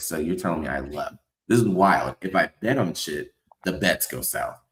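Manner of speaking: ordinary delivery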